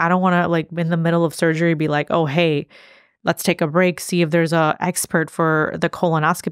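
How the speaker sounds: ordinary talk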